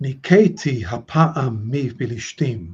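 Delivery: ordinary delivery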